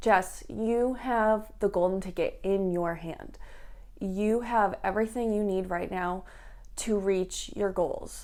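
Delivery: ordinary talk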